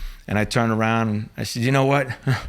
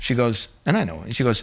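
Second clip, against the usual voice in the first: ordinary talk, nothing marked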